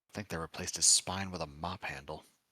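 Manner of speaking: muttered under the breath. Voicing Michael mocking a father's tone to nearby teammates: muttered under his breath. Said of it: "say Michael under his breath".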